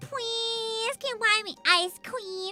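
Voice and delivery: put-on, high, drawn-out, cute, wheedling voice. Mocking how some grown women talk in public: imitating a put-on cute voice. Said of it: "women who actually talk like this, thinking it's cute".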